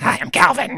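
tiny, very high, squeaky gremlin voice. Guessing aloud how a cartoon character sounds: Calvin voice. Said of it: "I bet Calvin sounds like".

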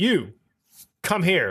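voice as if through a helmet speaker, behind a mask. Describing the stormtroopers' voice lines to another speaker: imitating stormtrooper helmet voice. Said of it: "sounds like the stormtrooper, like, voice in the helmet".

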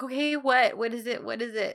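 put-on panicked, urgent, pressing tone. Retelling a woman's reply when a man distracts her, acting panicked. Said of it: "And she's so panicked".

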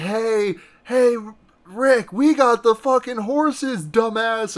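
acted, high, jeering, taunting holler from afar. Retelling a movie scene, a character shouting over to another: imitating Benny's taunting shout. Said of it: "Benny taunt-, shouts over".

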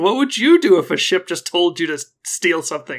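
loud, high, big put-on indignation. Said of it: "affects a very, like, indignant".

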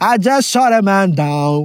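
mock mournful, distant voice.

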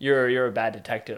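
plain

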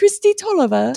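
very high, fake British accent. Saying a player's name after being asked: put-on British accent. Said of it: "You gotta say it with that British accent".

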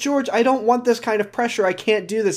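high, mock near-tearful voice, on the verge of tears. Retelling a character's reply while on the verge of tears: imitating someone near tears. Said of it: "on the fucking verge of tears".

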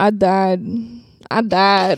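sudden, very slow, put-on Southern drawl. Playing a ghost in an improvised movie scene: Southern accent. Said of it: "why'd you go Southern suddenly?".

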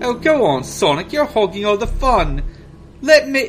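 high-pitched, put-on British accent. Reading a story aloud, voicing a character's line in a British accent. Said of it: "how's that British accent going for you?".

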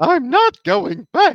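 shrill, loud, sing-song voice. Doing lines from the movie, the speaker uses a King Candy voice. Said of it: "oh sorry that's king candy".

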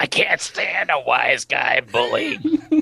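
put-on raspy voice. Retelling a scene, imitating the dad's raspy voice. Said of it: "He's got this raspy-ass voice".

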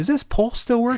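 giddy and thrilled, very high-pitched. Retelling a Ghostbusters scene of sliding down the pole: excited Ray Stantz impression. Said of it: "And he's so excited".

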